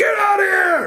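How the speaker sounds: very shrill, very slow, drawn-out yelling. Retelling a backstage brawl where someone yells at a wrestler: imitating someone yelling. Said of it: "Starts yelling at him like".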